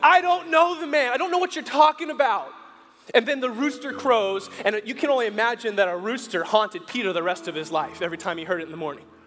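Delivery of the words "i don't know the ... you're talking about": play-acted, shouted out, full high loud yell. Retelling a denial in a firelit courtyard: acting out a yell. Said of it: "Peter yells".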